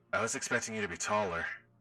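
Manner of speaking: ghostly voice altered through a voice changer. Voicing a ghost character greeting the group: ghost voice through voice mod. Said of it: "Gotta go back to my narrator voice".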